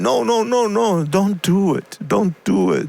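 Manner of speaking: high, slow, mock begging through sobs. Retelling how someone begged through tears: imitating someone crying. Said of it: "he started crying".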